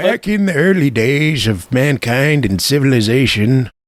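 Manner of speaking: put-on, slow, high old man voice. Joking about an old digital camera era: put-on old man voice. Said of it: "get your old man voice".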